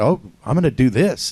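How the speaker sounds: normal talking voice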